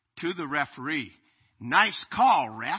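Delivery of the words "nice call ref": loud, sneering, sarcastic jab. Retelling an opposing player's remark to the referee, imitating his sarcastic tone. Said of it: "sarcastically from the other team".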